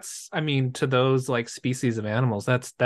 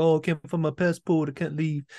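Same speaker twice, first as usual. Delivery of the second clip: faked, put-on English accent; 4 semitones higher than usual. Quoting a film character's excuse about a lost passport: put-on English accent. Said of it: "he doesn't have an English accent".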